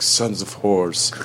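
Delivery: deadpan, flat delivery with no acting. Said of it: "says it in such a deadpan, fucking no acting way".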